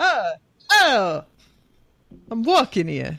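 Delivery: put-on Brooklyn accent. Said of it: "Now he's from Brooklyn".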